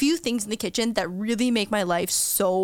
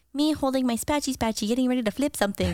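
little creature voice, done badly; 4 semitones higher than usual. Quoting a Baby Yoda meme about a spatula: Baby Yoda impression. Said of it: "your Yoda impression one more time".

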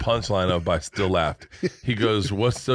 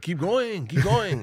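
put-on heavy Mexican accent, pitched up; 8 semitones higher than usual. Acting out a joke about Puerto Ricans getting to New York: very Mexican accent. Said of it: "That's a very Mexican accent".

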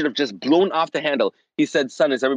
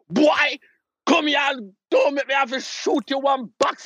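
put-on Jamaican accent in a voice pitched way up; 11 semitones higher than usual. Speaker acts out how their dad might have scolded them, in a Jamaican accent. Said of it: "Amazing Jamaican accent".

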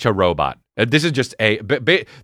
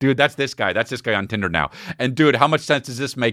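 ordinary talk

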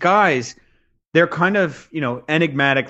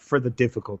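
put-on Greek accent, spoken quieter; 2 semitones lower, 5 dB quieter than usual. Retelling a man's answer about why he trains so hard, Greek accent. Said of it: "If you can think of like a Greek accent".

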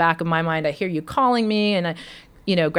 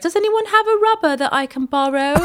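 very high-pitched put-on English accent; 11 semitones higher, 3 dB louder than usual. Retelling asking classmates to borrow something, imitating own past English accent. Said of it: "you had an English accent at this point".

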